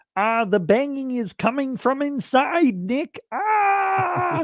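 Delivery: very high, slow puppet voice, "Ah" stretched out. Reading out a chat message written to be said in Kermit voice. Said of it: "says in Kermit voice".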